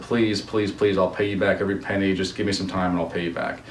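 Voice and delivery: ordinary talk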